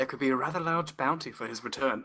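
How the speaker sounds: hushed, half-whispered aside. Whipping around to address the group, a player half-whispers. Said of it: "I whip around and whisper to my group".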